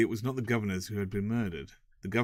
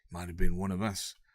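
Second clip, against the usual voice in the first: low-key, subdued, confidential tone; 2 semitones lower than usual. A prison warder passing a cell door remarks to another warder, in a hushed voice. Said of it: "said the warder in a hushed voice".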